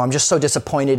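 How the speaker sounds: ordinary talk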